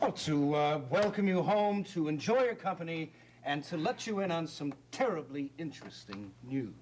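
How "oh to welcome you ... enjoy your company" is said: loud, high-pitched, too-loud voice. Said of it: "Could you please lower your voice a little".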